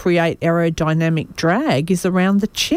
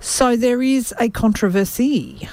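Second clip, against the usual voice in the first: fake French accent, clumsily done; 5 semitones higher than usual. Mid-story, deliberately put on a bad french accent. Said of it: "how you say controversy with a bad French accent".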